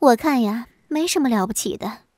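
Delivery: plain reading voice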